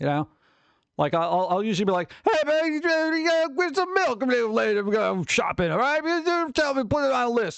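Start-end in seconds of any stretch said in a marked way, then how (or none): 2.2-7.6 silly, exaggerated, goofy put-on voice, pitched way up. Retelling how they talk to a voice assistant: goofy put-on voice. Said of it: "see how goofy I can make my voice".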